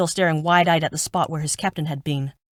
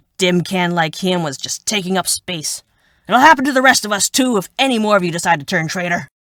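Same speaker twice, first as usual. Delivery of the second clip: harsh, barking delivery; 7 dB louder than usual. Reading a story aloud, voicing a soldier who berates the others, barking. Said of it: "[name] barked. / He glared. / [name] barked. / [name] barked".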